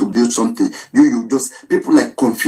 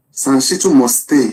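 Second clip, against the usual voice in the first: ordinary talk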